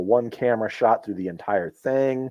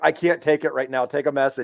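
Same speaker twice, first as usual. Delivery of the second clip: mock laughing through tears; 4 semitones higher than usual. Retelling turning down a phone call at work, retelling laughing through tears. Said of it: "I'm literally like bawling, crying, laughing so hard".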